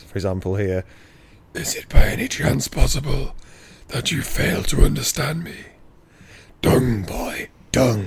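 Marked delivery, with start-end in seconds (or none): 1.5-8.1 dark, menacing, ominous gothic horror voice. Reading a bit of a book aloud, in Death's voice. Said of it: "Death's voice is".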